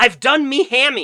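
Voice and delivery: very high, shrill, very loud yell. Telling of a balloon game, retelling a man's yell from the ground. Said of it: "he yells".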